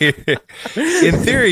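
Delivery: high-pitched voice, laughing while speaking.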